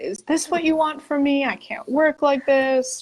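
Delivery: angry, ranting, pleading tone. Recalling crying in the car from arm pain, retelling yelling at Spirit. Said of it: "like yelling at Spirit".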